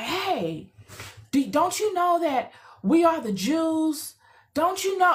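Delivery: mock aggressive, in-your-face, pushy, confrontational. Retelling a man in a video confronting a group, imitating an aggressive man. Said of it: "it was, like, completely aggressive".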